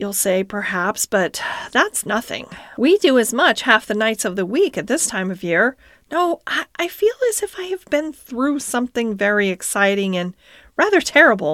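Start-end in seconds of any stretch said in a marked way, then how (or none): none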